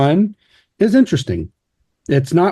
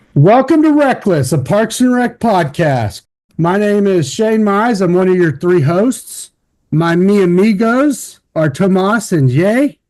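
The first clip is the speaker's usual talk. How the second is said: keyed-up, high-pitched, shouty, energetic delivery; 5 semitones higher than usual. Podcast host opens the show, introducing himself and his co-hosts, yelling. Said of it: "Why are you screaming at us?".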